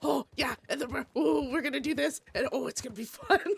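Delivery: put-on high, grumbly little voice, super excited rambling. Speaker retells how he got super excited, imitating grumbly excited Alonzo. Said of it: "Imagine a grumbly little Alonzo".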